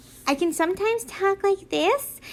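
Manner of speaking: put-on squeaky, high-pitched, kid-like phone voice. Speaker shows how they sometimes talk on the phone, in a high-pitched voice. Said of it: "how high pitched my voice is".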